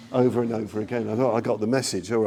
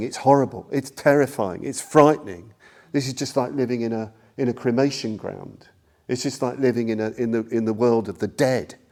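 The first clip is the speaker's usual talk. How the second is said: ordinary delivery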